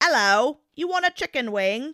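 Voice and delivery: silly, jokey, put-on British accent, high pitch. Retelling how a friend jokes around the house: imitating a put-on British accent. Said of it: "a British accent around the house sometimes".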